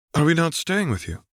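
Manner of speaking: hesitant, tentative, very high pitch, quick pace. Holding a little boy's hand, a character asks hesitantly: hesitant question. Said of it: "Shmi inquired hesitantly".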